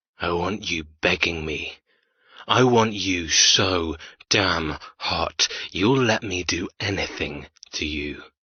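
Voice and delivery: rough, raspy, rasping voice. Narrator voicing a man's words during an intimate scene, raspy voice. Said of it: "His raspy voice".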